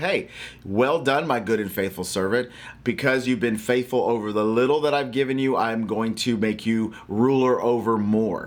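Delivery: plain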